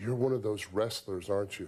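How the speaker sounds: ordinary delivery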